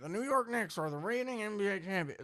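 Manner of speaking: high sports announcer voice. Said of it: "sounds like Kevin Harlan just said that".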